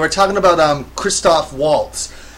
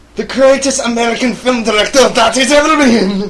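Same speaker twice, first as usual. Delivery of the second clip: very bad put-on German accent, pitched up; 7 semitones higher, 4 dB louder than usual. Discussing Inglorious Bastards, a host answers a question about Tarantino in the worst German accent ever. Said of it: "What accent was that supposed to be?".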